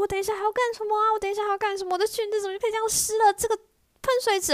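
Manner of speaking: put-on very high, angry little-girl tirade. Retelling a wet girl berating the fountain: imitating a girl scolding angrily. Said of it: "她开始骂喷水池".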